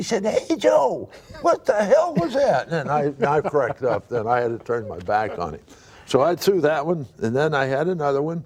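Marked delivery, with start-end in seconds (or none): 0.3-2.7 shrill, very high-pitched, swooping holler. Telling a story about grinning at Willie, act out his reply, imitating Willie's high-pitched yell. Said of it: "Willie had kind of a high-pitched voice".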